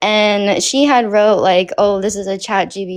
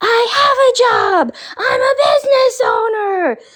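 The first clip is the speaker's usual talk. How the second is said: mock shrill, very high, drawn-out screaming yell. Retelling how she freaked out in front of everyone: imitating someone yelling and screaming. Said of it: "yelling and screaming in front of everyone".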